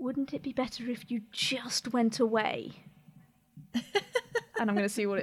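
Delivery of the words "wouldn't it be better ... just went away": whispered voice. A player's character whispers into one end of a quarterstaff: whispering. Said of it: "whisper into one end of my quarterstaff".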